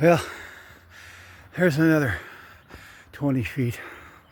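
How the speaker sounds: winded, breathing hard. Speaker stops partway through pulling, out of breath. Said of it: "let me catch my breath".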